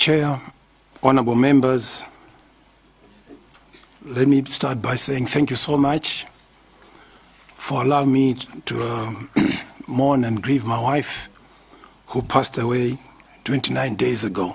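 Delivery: hoarse, raspy voice from the throat. Thanking the chair and members before testifying, hoarse voice. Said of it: "my voice is a bit hoarse".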